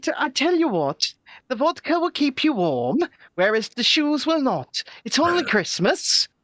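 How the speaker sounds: passable put-on Welsh accent. Joking about which goods count as essential, doing a bit: Welsh accent. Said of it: "That wasn't a terrible Welsh accent".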